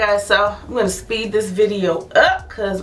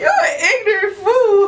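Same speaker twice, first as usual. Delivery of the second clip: very high-pitched, stifled giggling while speaking; 12 semitones higher, 3 dB louder than usual. Teasing another speaker while filming, laughing while talking. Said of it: "I'm trying not to laugh".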